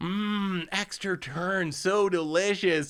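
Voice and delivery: mock ridiculous taunting relish, very slow, savoring mmm. Retelling a player eating his card before a judge: imitating ridiculous mocking phrases. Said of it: "these ridiculous kind of mocking phrases as he eats".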